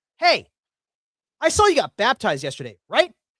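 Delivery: put-on loud, very high, swooping call-out. Retelling how a church reader called out for everybody to hear: imitating a loud call. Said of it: "He says it loudly".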